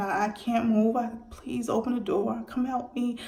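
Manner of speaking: mock, urgent, stammering pleading cry. Retelling being stuck as rescuers bang on the door: retelling a scream for help. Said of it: "And I'm screaming".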